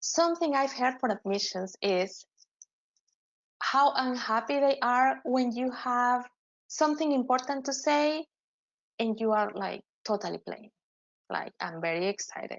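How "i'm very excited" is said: bored, uninterested, low and soft voice. Advising applicants on showing excitement, the speaker demonstrates the wrong way, bored tone. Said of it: "(adopts a bored tone)".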